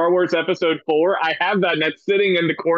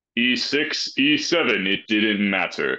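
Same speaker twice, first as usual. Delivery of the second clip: deep movie trailer narrator voice, much lower; 8 semitones lower than usual. Narrating a mock movie trailer about a chess champion, movie trailer narrator voice. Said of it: "So Bjorvio, if you want to start being the guy who narrates the trailer, and then Ali is the person who's in the movie itself".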